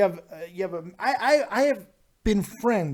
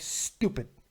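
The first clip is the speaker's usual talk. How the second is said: whispered, hushed, scornful, mocking, dismissive tone; 4 semitones lower, 7 dB quieter than usual. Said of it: "they hear an accent, they're like".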